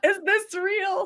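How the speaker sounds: acted, very high, tearful crying voice. Retelling hugging a plant in the garden: retelling own past crying. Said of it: "and I'm crying".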